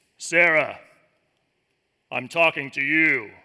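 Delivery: very low, deep, heavenly voice-of-god tone from above. Speaker imagining the voice people expect when listening to the Lord, in a deep, booming voice. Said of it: "that deep, booming voice".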